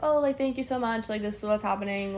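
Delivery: ordinary delivery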